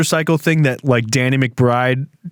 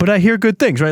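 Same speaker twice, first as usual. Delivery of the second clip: put-on Minnesota accent, pitched up; 5 semitones higher than usual. Told to insist they've never seen the film, in Frances McDormand's Fargo voice. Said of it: "Like something like a Minnesota person would say".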